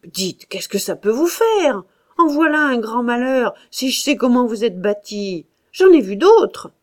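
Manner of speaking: loud, angry, irritated, temper rising bit by bit. A narrator reads a man's retort as he loses patience: growing angry. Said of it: "lui se fâchait peu à peu".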